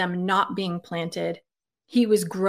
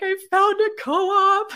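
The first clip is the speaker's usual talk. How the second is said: put-on weepy voice, very high and drawn out; 12 semitones higher, 3 dB louder than usual. Retelling a voice text to Mom, imitating own crying voice. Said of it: "voice texted my mom crying".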